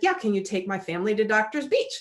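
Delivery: ordinary delivery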